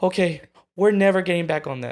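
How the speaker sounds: put-on high, loud, sassy little girl voice.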